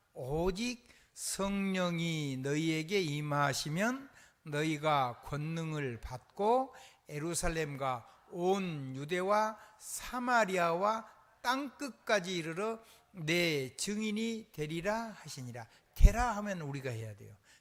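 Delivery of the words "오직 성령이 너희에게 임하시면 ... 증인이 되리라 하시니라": very slow, loud, clear word-by-word enunciation. Preacher reading Acts 1:8 aloud to the congregation, very slow and clearly enunciated. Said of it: "아주 천천히 또박또박 읽습니다".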